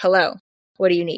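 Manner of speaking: put-on sharp, curt delivery. Recounting answering a phone call, the speaker acts out their reply: retelling a sharp reply. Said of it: "I was very sharp with my words".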